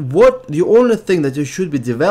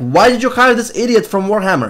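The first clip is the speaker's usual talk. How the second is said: mock heated, irate, raging, angry voice; 4 semitones higher than usual. Retelling how players complained about a developer: imitating raging players. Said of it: "people were just raging".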